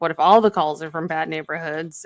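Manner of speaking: ordinary talk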